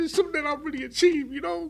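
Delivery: high-pitched, tearful, crying voice. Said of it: "excuse me for crying".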